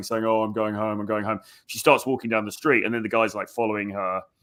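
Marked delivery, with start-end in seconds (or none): 0.2-1.4 put-on drunken slurring. Retelling a journalist pretending to be drunk: imitating drunken slurring. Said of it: "she's slurring".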